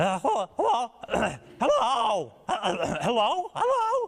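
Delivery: put-on very high, squeaky, childlike falsetto chirps. Recalling being thirteen, speaker shows how saying hello to a girl would sound, prepubescent falsetto chirp. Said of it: "prepubescent falsetto chirp of a voice".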